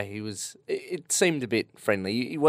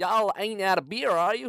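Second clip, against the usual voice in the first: awful put-on American accent, very high; 9 semitones higher than usual. Quoting a man's question in a story, in a bad American accent impression. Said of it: "this is a terrible American accent impression".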